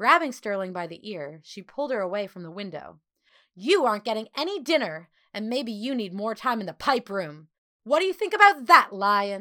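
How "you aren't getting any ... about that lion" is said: loud, shrill, shrieking screech. A woman pulls a girl away from the window, screeching. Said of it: "She screeched".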